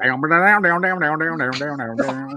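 put-on loud, high Indiana accent on repeated "down". Describing a man with an Indiana accent, the speaker mimics his Indiana accent. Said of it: "he's got that Indiana accent".

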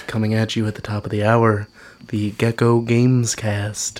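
smooth public radio announcer voice, on-air delivery. Suggesting a way to open their show, in NPR announcer voice. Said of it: "we could do like an NPR thing".

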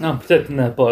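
ordinary talk

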